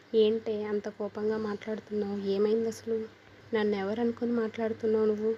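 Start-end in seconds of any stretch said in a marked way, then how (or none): none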